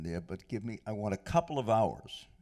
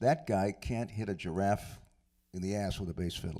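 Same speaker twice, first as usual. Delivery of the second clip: ordinary delivery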